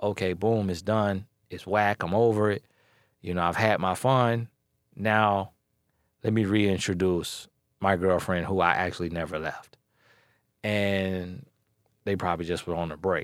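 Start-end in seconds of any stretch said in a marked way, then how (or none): none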